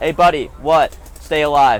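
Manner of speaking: ordinary delivery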